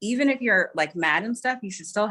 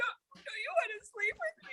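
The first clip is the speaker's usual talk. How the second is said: put-on crying, pleading, much higher, quieter; 12 dB quieter than usual. Retelling how they come back after a threat, imitating a crying plea. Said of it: "I come back crying like".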